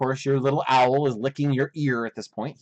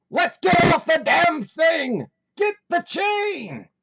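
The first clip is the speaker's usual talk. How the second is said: shrill, very high-pitched scream; 4 dB louder than usual. Voicing a character trapped in a smoking engine house: screaming. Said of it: "you can hear Morty in there screaming".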